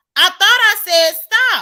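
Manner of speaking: fed-up, loud, high angry yelling shout. Interrupted for the third time, telling the other person to stop, yelling. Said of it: "why are you yelling?".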